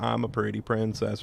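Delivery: ordinary delivery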